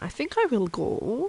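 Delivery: put-on accent drifting a little German. Roleplaying as a Romanian cooking venison, slipping into a slight German accent. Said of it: "Now I'm becoming a little bit German".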